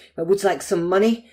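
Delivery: put-on American accent. Retelling what a man said in a dream, in a put-on American accent. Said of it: "That's my American accent".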